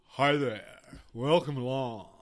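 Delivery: very loud, booming on-air radio DJ voice. The podcast host welcomes listeners in a DJ voice. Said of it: "I'm just going to do what John calls my DJ voice".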